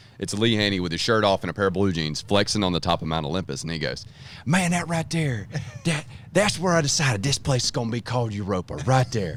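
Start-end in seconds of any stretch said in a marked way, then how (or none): 4.5-9.4 put-on thick, heavy Southern accent, pitched up. Retelling what Eric Hillman said in his office: imitating Eric Hillman with a huge Southern accent. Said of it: "I just gave Eric Hillman a huge Southern accent".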